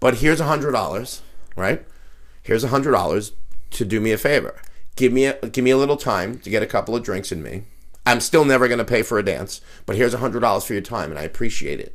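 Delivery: ordinary delivery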